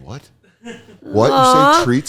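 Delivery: very high, swooping, sing-song dog voice. Acting out the dog behind the door hearing the word treats: imitating the dog Myrtle. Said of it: "She's going like".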